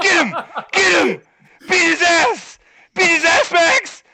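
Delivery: put-on wild cheering, very high and very loud. Telling how someone cheered for Max the whole time, the speaker retells excited cheering. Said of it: "cheering for Max the whole time".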